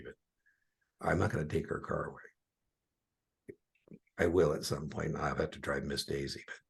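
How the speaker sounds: hushed voice. Speaker talks about their retired mom so she won't hear, lowered voice. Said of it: "I'm lowering my voice right now".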